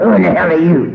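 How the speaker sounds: put-on drunk, husky voice. Retelling a drunk caller's question: imitating a drunk husky voice. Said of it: "She was drunk and she had the voice to prove it".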